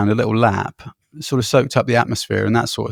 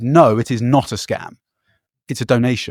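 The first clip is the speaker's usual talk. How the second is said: mock-firm, assertive put-on English accent. Speaker retelling what the man collecting money replied, imitating an assertive English accent. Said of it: "almost in an English accent, very assertive".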